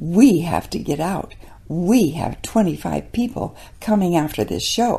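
play-acted pompous, officious, self-important voice. Storyteller quoting a lady shoving past after a show, mock self-important voice. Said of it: "she says with a very important voice".

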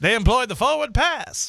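put-on very high, old-timey newsreel announcer voice. Host talks as if doing a 1948 newsreel, in an old newsreel announcer voice. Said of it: "You just could talk the whole show like that".

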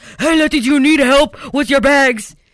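put-on booming, very loud big old man voice. Retelling getting out of the car and hearing Jose, Jose's big old man voice. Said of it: "I just hear this big old man voice".

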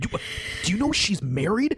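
put-on low, hushed voice. Speaker retells a man confronting them so nobody else hears: imitating a hushed voice. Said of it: "keeping his voice low enough so nobody else can hear him".

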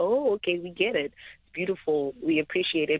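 normal talking voice

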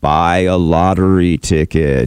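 very slow, big, deep booming voice. In a joke, speaker voices the answer to a man praying to win the lottery: big booming voice. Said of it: "he heard this big booming voice".

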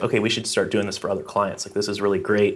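ordinary delivery

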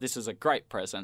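ordinary talk, nothing marked

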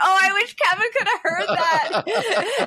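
high, slow, drawn-out delighted squeal. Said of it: "And I was like".

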